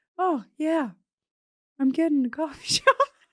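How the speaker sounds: sweet, gentle, mild-mannered voice. Describing how a woman speaks, imitating her soft, gentle voice. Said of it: "She speaks really soft and gentle".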